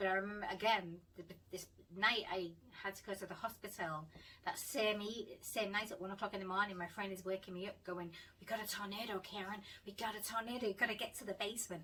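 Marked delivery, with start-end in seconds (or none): 8.4-11.8 clumsy, terrible, put-on American accent. Retelling a friend waking her at one in the morning about a tornado, bad American accent. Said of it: "Excuse my American accent; it's terrible".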